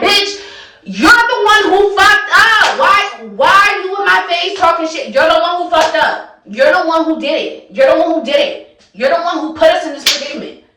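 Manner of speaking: put-on heated, angry, blaming cursing rant. Recounting a fight, the speaker replays cursing at him: retelling cursing someone out. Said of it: "So now I'm cursing at him".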